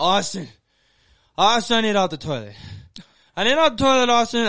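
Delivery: put-on shrill, very high, very loud drunken yelling. Retelling being stuck on the toilet calling a roommate: retelling a drunken yell. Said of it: "I'm just sitting there yelling".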